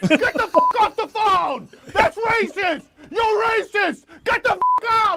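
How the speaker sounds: very high, shrill, angry shouted yelling. Responding to a caller who asked about the Armenian genocide, yelling.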